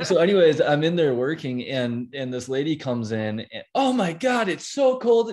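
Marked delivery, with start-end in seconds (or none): 3.7-5.3 mock, very high, shouted complaining grumble. Retelling a lady who came in while the speaker was working, imitating a lady shouting. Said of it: "Just shouting".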